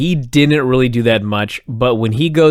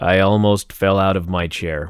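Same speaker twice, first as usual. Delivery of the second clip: mock flat monotone, lower pitch; 5 semitones lower, 4 dB quieter than usual. Trying the phrase again after being told to do their best, imitating flat monotone. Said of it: "Would you like me to try again?".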